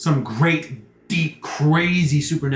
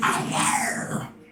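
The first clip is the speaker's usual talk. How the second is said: thick, burbling, gurgling creature voice. A game master voices a one-eyed creature speaking inside the players' heads, thick and burbling. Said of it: "in a thick, burbling voice inside".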